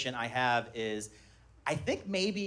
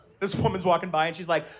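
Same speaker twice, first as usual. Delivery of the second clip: normal talking voice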